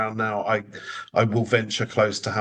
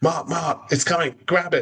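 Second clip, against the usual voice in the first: high-pitched, urgent, hollered yell; 7 semitones higher than usual. Retelling how coworkers shouted as a kangaroo approached: imitating coworkers yelling.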